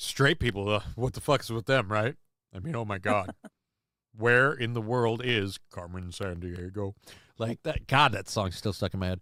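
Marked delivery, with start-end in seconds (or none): 0.0-6.9 voice deliberately dropped low, put on. Speaker ripping on straight people to a co-host, deeper voice. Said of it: "my voice gets deeper".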